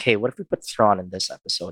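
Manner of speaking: ordinary talk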